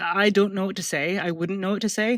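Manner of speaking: ordinary delivery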